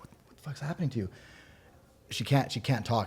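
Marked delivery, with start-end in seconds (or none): 0.0-1.1 frantic, rushed, breathy whispered panic. Retelling finding the partner unable to talk: retelling own panicked voice. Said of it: "And I'm, like, panicking".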